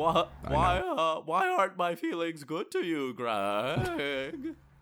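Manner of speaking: bad put-on horse voice, high and swooping. Playing a horse in the conversation, a bad horse impression. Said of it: "like a bad a bad horse impression".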